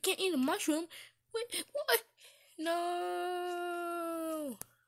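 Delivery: high, loud panicked cry.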